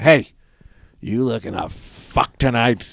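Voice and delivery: put-on old woman voice. Imagining a 90-year-old woman walking into a bar, in a 90-year-old woman voice. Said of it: "a 90-year-old woman walking into a bar and just going".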